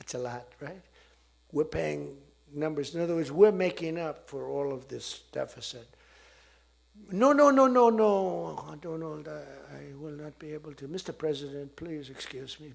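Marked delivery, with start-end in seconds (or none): 7.1-12.7 loud, heavy put-on French accent, stretched-out no. Retelling a call asking France to raise prices: imitating Emmanuel Macron, French accent. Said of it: "I love the French accent".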